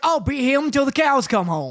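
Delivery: put-on Appalachian country accent. Telling the other speaker how Goku talks in the manga: Goku with Appalachian accent. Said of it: "Goku has like an Appalachian accent".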